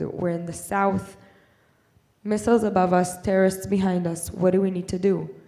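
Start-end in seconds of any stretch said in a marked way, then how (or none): none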